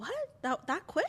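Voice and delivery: stunned, incredulous tone. Retelling a husband's reaction to a fast forty-thousand-dollar sale: imitating someone shocked. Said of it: "he was, like, shocked".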